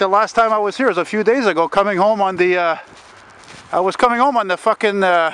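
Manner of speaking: panting, breathless, winded, out-of-breath rambling. Having just run from Notre Dame, the speaker starts a story: out of breath. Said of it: "I'm out of breath".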